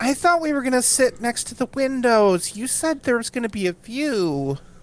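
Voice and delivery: very high, pinched nasal whine, word "view" stretched out. A player voices Chone interrupting the host's question, in a nasal, slightly annoying Chone voice. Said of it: "in a rather nasal voice that's j- like themselves but a little bit annoying".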